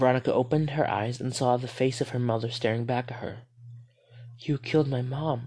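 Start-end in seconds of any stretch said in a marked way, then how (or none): 4.4-5.5 whispered, slower. Narrator reading Veronica's line on seeing her mother's face, whispered. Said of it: "Veronica whispered".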